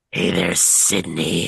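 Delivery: very low, rough, creaky and creepy voice. Asked by a co-host to repeat the question a little bit creepier, creepier voice. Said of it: "just be a little bit creepier".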